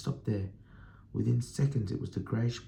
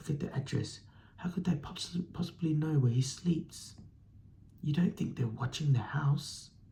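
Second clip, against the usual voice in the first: trembling, quivering, fearful voice; 4 semitones higher than usual. Narrator reads Aunt Petunia speaking to Vernon, in a quivering voice. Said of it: "Aunt Petunia was saying in a quivering voice".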